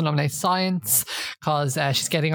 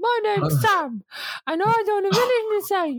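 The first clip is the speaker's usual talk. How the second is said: mocking put-on voice, higher pitched. Retelling a housemate mocking another by talking with his arse: impression of Sam. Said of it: "Let me do an impression of Sam".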